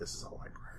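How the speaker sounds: whispered, hushed voice.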